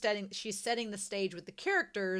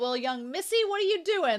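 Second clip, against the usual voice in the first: put-on little old grandpa voice, pitched higher; 8 semitones higher, 4 dB louder than usual. Imitating a character calling a young woman missy: little grandpa voice. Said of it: "He sounds like a little grandpa when he calls them all".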